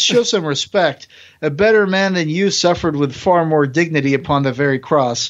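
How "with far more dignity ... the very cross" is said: ordinary talk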